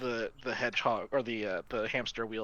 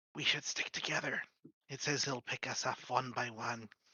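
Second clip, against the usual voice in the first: whispering; 3 dB quieter than usual. Whispering to the group in character beside a door: whisper. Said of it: "I'm gonna whisper to the group".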